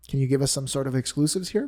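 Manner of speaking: usual speaking voice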